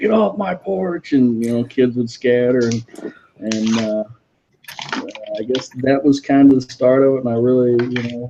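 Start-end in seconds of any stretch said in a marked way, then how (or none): 0.0-1.1 mock scary, high, drawn-out screaming. Retelling how a guy screamed at trick-or-treaters near the door: imitating a man screaming. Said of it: "he'd be screaming at you, like".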